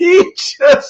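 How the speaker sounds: high-pitched, laughing while speaking.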